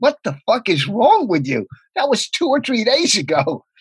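put-on laughing through the words, high, disbelieving. Retelling what a friend said on a phone call, imitating him laughing.

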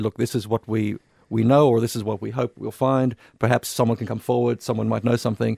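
plain

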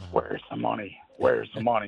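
put-on creepy whisper. Speaker recalls Biden asked about money in an interview, creepy whispery Biden impression. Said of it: "he got in his little creepy, whispery voice".

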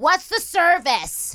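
put-on, shrill, very high screeching shout. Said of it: "screaming at me across the counter".

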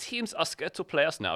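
clumsy, bad put-on German accent. Quoting a football manager in a bad German impression. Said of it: "my bad, uh, German impression".

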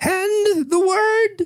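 put-on very high old-lady librarian announcer voice. Describing an imagined old lady librarian; imitating an old lady librarian. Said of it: "an old lady at a librarian going".

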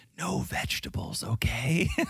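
soft, hushed whisper. Retelling how Nicole ordered a sandwich, imitating Nicole whispering. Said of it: "And then she whispers".

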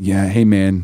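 dead serious, heavy, solemn, grave tone. Imitating how the other speaker opened a call: imitating a solemn tone. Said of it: "You sounded so solemn about it".

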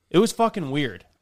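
ordinary delivery

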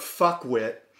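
normal talking voice

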